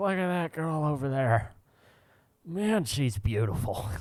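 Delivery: play-by-play ballpark announcer voice. Retelling how a drunk announcer talked: imitating Harry Caray. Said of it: "he's just like".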